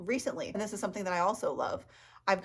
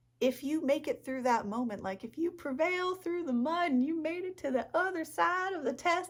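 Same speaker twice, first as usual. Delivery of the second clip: put-on, pitched-up Texan Southern accent, military-style voice; 8 semitones higher than usual. A speaker talking about painting slips into a texan southern military accent. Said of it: "I'm turning Texan and like Southern and military now".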